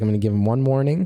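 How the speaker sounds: normal talking voice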